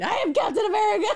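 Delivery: very high full-throated shout. Joking about yelling a line in the middle of the night: imitating someone yelling. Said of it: "I'm gonna just be yelling that".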